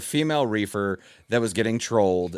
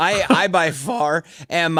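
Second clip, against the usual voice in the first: very slow, high, cracking voice; 6 semitones higher, 3 dB louder than usual. Admitting to being the loudest one in the group: voice cracking. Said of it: "as my voice cracks there".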